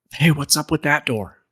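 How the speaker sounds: whispered speech. A player's character whispers over to the other two companions, whispering. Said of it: "I'll like whisper over to the other two".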